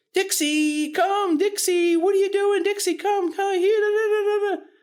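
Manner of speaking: very high, excitable, drawn-out call. Showing what not to do when calling a puppy: high-pitched puppy-calling voice. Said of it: "Nothing like this. ... Those high-pitched tones".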